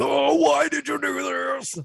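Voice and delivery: very high, squeaky, slow, creaky, silly complaining voice. Retelling how the stomach feels after the meal: put-on butthole voice. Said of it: "your butthole's voice again?".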